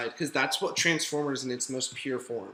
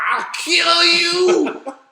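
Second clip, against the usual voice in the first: mock furious yell, higher and louder; 13 dB louder than usual. Retelling how a movie character reacts to an animal: imitating a ballistic outburst. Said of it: "goes all ballistic".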